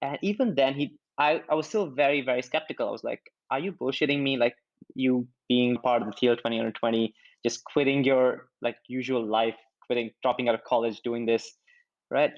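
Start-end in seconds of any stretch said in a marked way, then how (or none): none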